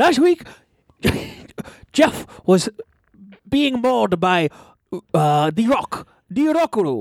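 put-on Chinese accent. Recapping what happened to Jeff last week, in a put-on Chinese accent. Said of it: "now it makes you sound like you have a Chinese accent".

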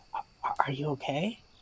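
very quiet, careful whisper, barely there. Voicing a character who goes over to check on a friend: whispering. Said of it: "Ariel will go over and whisper".

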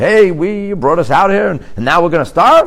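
very loud, very high, brazen and bold. Speaker acting out people announcing their complaint to Moshe, in a put-on bold voice. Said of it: "in this bold voice".

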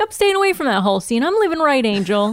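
fast, rattled-off nineteen-twenties patter. Retelling a character's line: fast old-timey 1920s voice. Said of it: "He's got that, like, fast".

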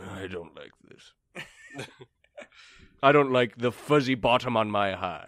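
slow, drawn-out horse voice. Voicing the complaint of the horse being ridden: Denmark the horse voice. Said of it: "Denmark, the one you're on, uh, is like".

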